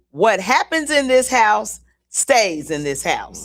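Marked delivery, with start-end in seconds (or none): none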